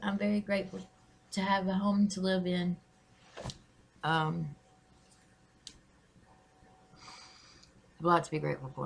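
choked up, fighting back tears. Talking to viewers on Thanksgiving, holding back tears. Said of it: "I'm trying not to cry".

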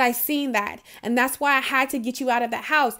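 normal talking voice

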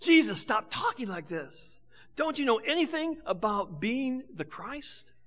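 hushed half-whisper, low tones. Speaker retells a disciple taking his teacher aside, in a hushed half-whisper. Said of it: "in hushed tones and in whispered words".

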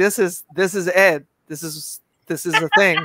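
ordinary delivery

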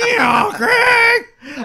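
very high, very loud, shrill voice. Imagining the other speaker's wife in the bedroom: imitating the wife's voice. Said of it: "and then in her voice going".

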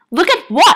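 shrill, very high, annoyed and perturbed tone. A woman answers an unseen voice, addressing the ceiling, perturbed and annoyed. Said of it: "perturbed and annoyed".

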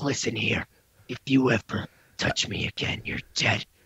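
dropped, deep, breathy whisper. Retelling another speaker's threat: imitating someone going real deep. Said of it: "You got real deep".

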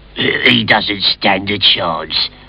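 grumbling low and slow. A rival character comments as the hero sets off, muttering like bad plumbing. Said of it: "muttered his rival".

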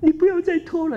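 very high voice on the verge of tears. Telling a story, the speaker acts out a college student, imitating a crying voice. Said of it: "带着哭腔哦".

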